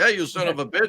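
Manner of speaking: scary, menacing tone, very high pitched. Imitating a huge wrestler cussing someone out: imitating Ox Baker cussing. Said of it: "he could scare the shit out of you just by cussing at you".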